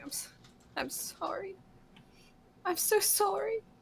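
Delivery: very high, slow, stumbling, tearful sobbing. Voicing a character fallen to his knees crying, apologizing: crying while apologizing. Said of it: "falls to his knees and starts crying".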